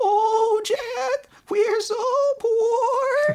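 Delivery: very high, wobbling, weird warbly voice. Retelling a story, voicing Jack's mother: weird warbling voice. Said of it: "She has a weird voice where she's like".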